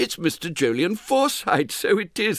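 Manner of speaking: sounding surprised. Reading a story, the ticket official recognising an old patron: surprised voice. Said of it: "in a surprised voice".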